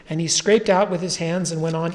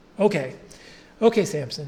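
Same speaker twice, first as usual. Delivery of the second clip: plain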